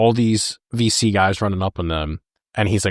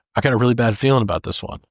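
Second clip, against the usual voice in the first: acted frightened soldier voice; 3 semitones higher than usual. Retelling a movie scene, quoting O'Neill: imitating O'Neill's scared voice. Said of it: "You can hear it in his voice".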